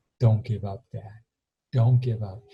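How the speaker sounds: tearful voice breaking and cracking. Retelling a teenage son's plea to his dad: imitating a voice cracking with tears. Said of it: "and his voice cracked".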